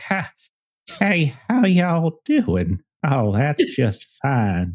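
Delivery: put-on very slow, old Texan man's accent. Showing the voice planned for an old game character: old man texan accent. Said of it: "I have old man Texan accent too".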